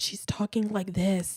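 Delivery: put-on low sexy voice. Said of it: "speaking in a low and sexy voice".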